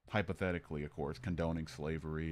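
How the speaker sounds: ordinary delivery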